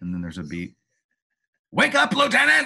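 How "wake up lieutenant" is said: shrill, very high, loud scream. Retelling the doctor waking the lieutenant: imitating the doctor screaming.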